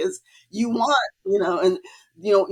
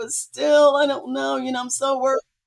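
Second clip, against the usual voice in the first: mock crying, much higher pitch; 6 semitones higher than usual. Retelling a conversation with him, imitating how she cried back then. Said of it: "And I just started crying".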